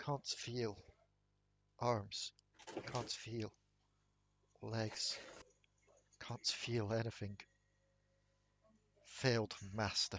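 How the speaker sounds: robotic, mechanical voice with an echo. The game master voices a voice the players hear, echoing mechanical voice. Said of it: "Kind of like a echoing mechanical voice".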